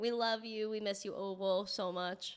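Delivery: choked up, emotional, fighting back tears. Thanking a viewer and remembering a community member who is gone: emotional, near tears. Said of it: "Sorry, guys".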